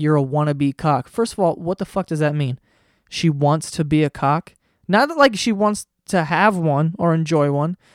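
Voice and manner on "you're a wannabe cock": ordinary talk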